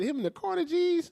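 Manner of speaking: high-pitched, mocking put-on voice. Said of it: "he said".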